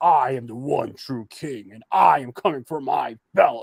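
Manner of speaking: slow, deliberate movie-villain delivery, like a supervillain. Praising a wrestler's promo, imitating Samoa Joe's villain voice. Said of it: "the way he talks".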